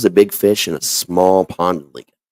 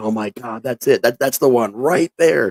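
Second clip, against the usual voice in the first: mock thrilled, over-the-moon, freaking-out outburst; 3 semitones higher than usual. Retelling the moment he was shown artwork based on a story, reenacting excited freaking out. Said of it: "I was freaking out".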